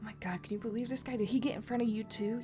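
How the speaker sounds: grumbling quietly. Voicing an annoyed shopper in line, muttering under breath. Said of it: "under their breath".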